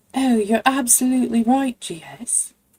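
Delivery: mocking English accent. Speaker answers G S, mocking Mimsy's English accent. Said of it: "An English accent".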